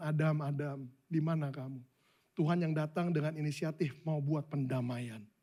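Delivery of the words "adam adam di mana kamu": tender, gentle, soft calling voice. Acting out god calling to adam, acting out a gentle call. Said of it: "Dia panggil Adam dengan kelembutan".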